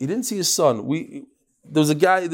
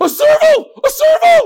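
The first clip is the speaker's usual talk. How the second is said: shrill, booming, very high scream, stretched long; 10 dB louder than usual. Retelling how a man on safari reacted: imitating someone screaming. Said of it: "He started screaming".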